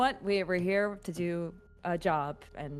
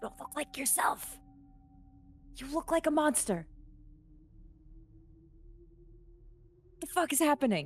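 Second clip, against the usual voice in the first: hushed, whispered voice, higher pitch; 9 semitones higher, 3 dB quieter than usual. Speaking aside to another player during the scene: whispering. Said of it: "What is with all the whispering?".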